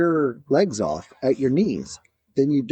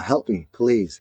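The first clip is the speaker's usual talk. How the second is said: put-on computer speech voice, lower pitch; 4 semitones lower than usual. Retelling what a man types into his computer for others to hear: imitating a computer speech voice. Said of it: "type into his computer".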